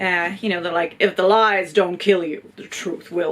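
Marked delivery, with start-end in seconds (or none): 1.0-3.3 terrible dramatic movie-trailer voiceover voice. Speaker reads a tagline aloud the way that voiceover guy would: terrible voiceover-guy voice. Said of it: "That was a terrible voiceover voice".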